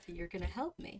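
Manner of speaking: muttered under breath. Voicing a frightened character repeating a line under his breath: muttered under breath. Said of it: "he repeats again under his breath".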